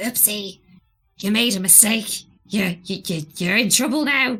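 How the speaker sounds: small, impish gremlin creature voice. Discussing voices heard earlier, the speaker repeats a line in the gremlin voice. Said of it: "the gremlin voice at the end that was like".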